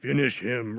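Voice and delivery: booming deep announcer voice. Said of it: "booming, deep voice that would come over".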